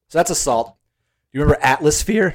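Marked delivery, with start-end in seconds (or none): 1.4-2.4 excited voice breaking and cracking. Asking the other speaker whether they remember a past event, voice cracking. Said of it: "my voice just cracked".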